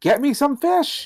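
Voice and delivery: very high-pitched, shrill screaming voice. Acting out a villain yelling at his wife: Danny DeVito screaming. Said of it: "Screams at his wife".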